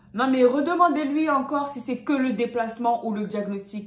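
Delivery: very loud insistence. Retelling what a man said during a service call, said very loudly. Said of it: "Il dit ça bien fort".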